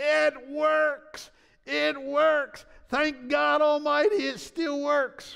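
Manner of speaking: very high, very loud, very slow drawn-out yell. Retelling how Brother Richards waved a hanky: imitating someone yelling loudly. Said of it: "he's yelling at the top of his lung".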